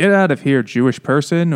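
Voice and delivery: mean-spirited, hostile, spiteful tone. Retelling a son's line to a man in a story: imitating a nasty tone. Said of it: "in the nasty way".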